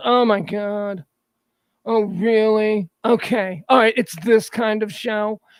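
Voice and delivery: acted-out snotty, snooty, dismissive tone, slow. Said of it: "She was just, like, real snotty".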